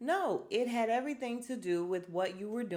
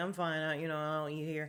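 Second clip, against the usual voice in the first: put-on muttering under breath, lower; 3 semitones lower than usual. Retelling a pool outing, imitating Kenya under her breath. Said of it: "under her breath".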